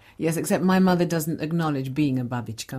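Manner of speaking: ordinary talk, nothing marked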